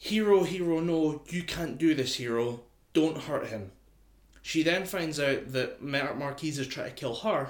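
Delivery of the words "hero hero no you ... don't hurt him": loud, raised shout at full cry. Retelling an anime scene where a character shouts from a plane: imitating a character shouting.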